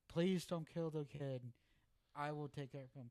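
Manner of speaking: loud, tearful pleading. Retelling fathers outside abortion clinics: imitating someone screaming, crying, begging. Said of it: "screaming and crying and begging".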